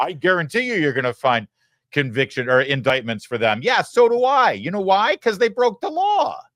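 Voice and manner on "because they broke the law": voice breaking, cracking very high. Speaker arguing a point to the audience: voice cracking. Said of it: "I don't know why my voice cracks".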